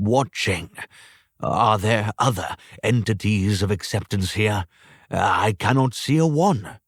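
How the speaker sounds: ordinary delivery, nothing marked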